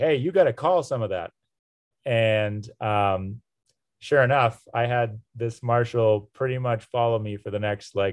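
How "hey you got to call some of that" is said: called out loudly, pitched up a bit. Retelling calling out to an official by the road: imitating own past yell. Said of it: "And so I yelled out".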